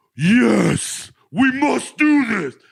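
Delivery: very high, swooping, grandiose, overdramatic dwarf king voice. Mocking the main dwarf character in a movie, imitating an overdramatic dwarf king. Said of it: "that main dwarf guy is like".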